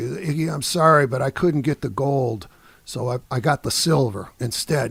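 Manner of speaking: usual speaking voice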